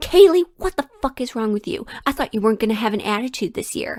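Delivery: acted, heated, angry scolding outburst. Recounting the boss confronting the speaker in the break room, retelling a boss screaming. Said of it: "he's like screaming at me on the top of his lungs".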